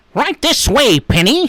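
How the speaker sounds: very high, loud, belted cartoon voice. Recalling a voice actor's cartoon roles, quoting in an Inspector Gadget voice. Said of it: "so he did that voice".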